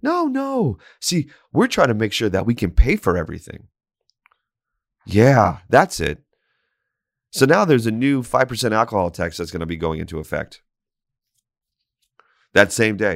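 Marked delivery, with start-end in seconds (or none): 0.0-6.2 heavy put-on sarcasm, swooping sing-song, "no" long drawn out. Telling listeners about policy decisions, sarcastic voice. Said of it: "can you feel my sarcasm voice working in here?".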